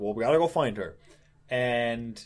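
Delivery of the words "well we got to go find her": ordinary talk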